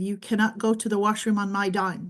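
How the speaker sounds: normal talking voice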